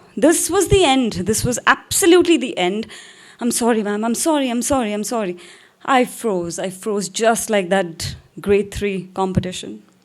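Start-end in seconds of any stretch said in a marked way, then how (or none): 3.4-5.4 mock-panicked voice, lower pitch. Recalling freezing up, the speaker apologizes to ma'am, retelling a panicked apology. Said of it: "I panicked".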